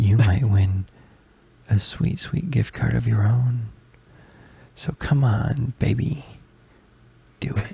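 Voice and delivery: put-on hushed, soft ASMR-style whisper. Imitating a YouTuber's video intro, getting hushed like ASMR: imitating a hushed ASMR voice. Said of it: "he would get real hushed and like this".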